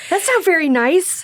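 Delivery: put-on very high, raspy small-kid voice, little boy. Improvising a scene as a little boy told he runs too slow, raspy little boy voice. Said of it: "That's a kind of a raspiness".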